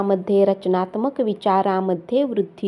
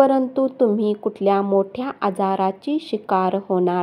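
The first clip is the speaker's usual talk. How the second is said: normal talking voice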